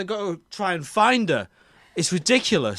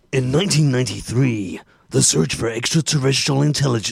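movie trailer narrator voice, lower; 6 semitones lower than usual. Reading a film synopsis before the group acts out the movie, movie trailer voice. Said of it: "I'm going to read this in a trailer voice".

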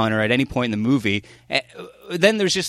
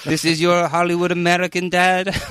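French accent with voice pitched up; 6 semitones higher than usual. Joking about a movie, the speaker delivers a line in a french accent. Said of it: "That's my French accent".

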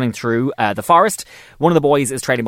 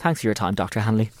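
mock-deadpan, lower and much quieter; 3 semitones lower, 6 dB quieter than usual. Retelling how Cassie answered a rude question, imitating Cassie's deadpan. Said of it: "just deadpan goes".

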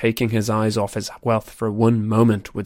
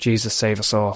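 muttered under breath, much slower. A narrator reads a man's words as Brandon lies dying, muttered under his breath. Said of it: "he muttered under his breath".

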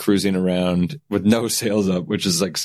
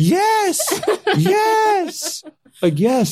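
very high, very slow, drawn-out, swooping, put-on excited "yes". Act out her answer as you pull it out to propose, imitating someone who can't calm down. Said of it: "can you calm down?".

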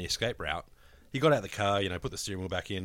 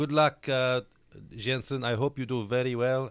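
put-on Spanish accent; 4 semitones higher, 3 dB louder than usual. Retelling Alonso's message to Jensen Button, in an Alonso Spanish accent impression. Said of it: "in his Spanish accent that I shall now attempt to do".

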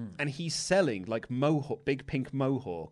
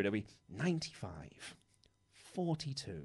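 mock disappointed flat announcer voice, slower and quieter; 12 semitones higher, 4 dB louder than usual. Mimicking a darts-style announcer calling out low scores, with a hint of letdown in the voice. Imitating a disappointed announcer. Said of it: "like really gruff voice".

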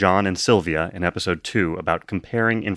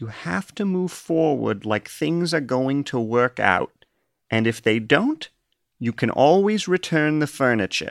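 high, put-on old grandma voice; 6 semitones higher than usual. Quoting a woman's advice about the speaker's fears, in a grandma impression. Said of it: "I'm going to do a grandma impression here".

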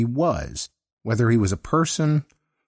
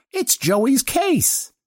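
cheery, jolly, very high-pitched declaring delivery. A narrator reads a kid's announcement to the narrator, in a jolly tone. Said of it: "he announced in a jolly tone".

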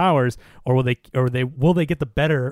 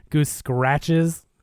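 ordinary talk, nothing marked

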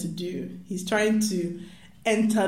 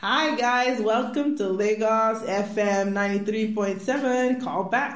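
put-on American accent, Nigerian DJ-style radio host; 3 semitones higher than usual. Mimicking a Nigerian radio host greeting listeners, imitated American accent. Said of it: "an American accent is an essential part of being a radio host in Nigeria".

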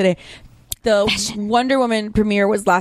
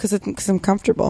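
mock-deadpan flat delivery. Retelling how she answered red-carpet askers about wearing flats, deadpan. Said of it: "she looked at them deadpan in the face".

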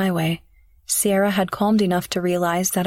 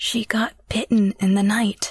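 muttered low, under her breath. [name] tells Marshall as he starts the van; under her breath. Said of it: "[name] said under her breath".

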